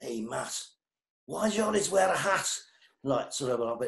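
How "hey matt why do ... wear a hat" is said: put-on thick, broad Liverpool Scouse accent, pitched up. Retell how the drummer Keith came up and spoke to you, in Keith's broadest Scouse accent. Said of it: "In broadest Scouse accent".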